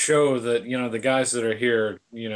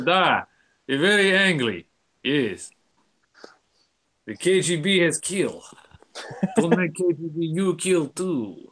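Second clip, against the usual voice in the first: put-on Russian gangster accent, pitched up; 5 semitones higher than usual. Joking about an angry mafia-style reading, a speaker plays along: mock russian accent. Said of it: "I was going like Russian there".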